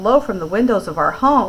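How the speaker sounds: ordinary delivery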